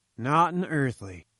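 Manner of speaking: plain reading voice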